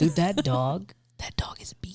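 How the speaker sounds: hushed whisper under the breath. Talking with a friend about a mean dog nearby, the speaker is whispering. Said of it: "Why are you whispering?".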